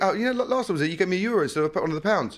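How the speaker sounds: light, casual, half-laughing tone. Retelling a mix-up over change, the speaker replays their own remark, retelling almost laughing. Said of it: "almost like laughing".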